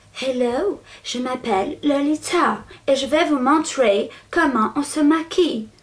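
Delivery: French spoken with a put-on English accent. Inventing a voice for the one she addresses, as if they could talk, in a put-on english accent. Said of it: "Pourquoi j'ai fait l'accent anglais?".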